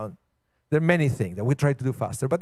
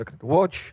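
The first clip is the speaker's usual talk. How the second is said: normal talking voice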